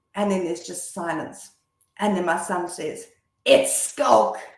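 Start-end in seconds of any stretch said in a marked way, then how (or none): 3.4-4.3 put-on furious, indignant, very angry, loud outburst. Retelling her son's reply to her on the phone: retelling an angry, loud reply. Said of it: "in a very angry, loud voice".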